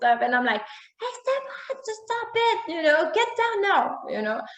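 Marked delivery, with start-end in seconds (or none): 0.6-4.0 very high, shrill, angry yell. Speaker acts out what they yelled at him: retelling an angry yell. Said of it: "And I'm yelling at him, and I'm angry".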